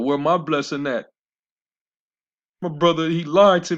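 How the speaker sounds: mock weeping, high, crying, complaining, begging voice. Retelling how Jacob's brother begged his father for the blessing, imitating crying and begging. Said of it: "He started complaining and crying, begging his father".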